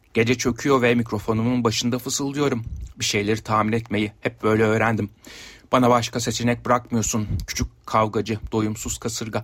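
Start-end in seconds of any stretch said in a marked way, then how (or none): none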